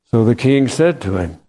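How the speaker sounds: normal talking voice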